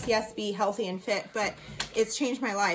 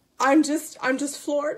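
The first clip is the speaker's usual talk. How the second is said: overcome, tearful, pitched-up joy; 5 semitones higher, 4 dB louder than usual. Sharing news that someone paid the trip balance in full, crying with joy. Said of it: "I can't stop crying of joy".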